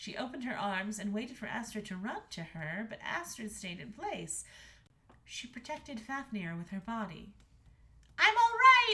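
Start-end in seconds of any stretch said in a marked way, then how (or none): 8.2-8.9 very loud, very high crying out. Reading a story, a daughter cries out to her mother, the queen. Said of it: "she cried out".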